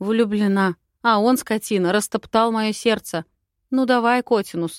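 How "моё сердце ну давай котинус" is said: plain reading voice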